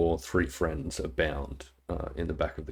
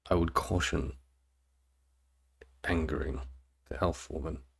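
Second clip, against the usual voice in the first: much quieter, hushed aside; 3 dB quieter than usual. A character leans in to give a warning, much quieter voice. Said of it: "in a much quieter voice says".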